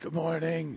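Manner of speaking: put-on ill-sounding voice. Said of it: "You're like".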